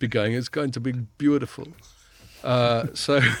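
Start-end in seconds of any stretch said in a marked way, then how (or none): 0.3-1.7 put-on vague generic Nordic accent. Imitating a possible guest who would only cheerlead: generic Nordic accent as Max Granryd. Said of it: "That was generic Nordic accent".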